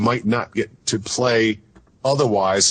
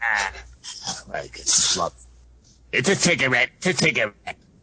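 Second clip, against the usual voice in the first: put-on raspy old lady smoker voice; 4 dB quieter than usual. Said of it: "Lady that's been smoking a lot".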